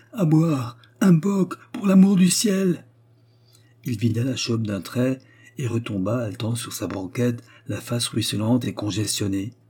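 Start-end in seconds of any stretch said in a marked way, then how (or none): 0.2-2.9 desperate, tearing, high, heart-rending cry. A man who has just torn off his collar calls out: desperate cry. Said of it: "cria Karlsson d'une voix déchirante".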